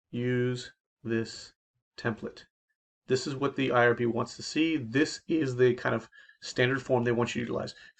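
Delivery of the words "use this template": slow, soft, deliberate, spaced-out delivery. Explaining the IRB consent form, repeating the instruction slower. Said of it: "Let me say that again slower".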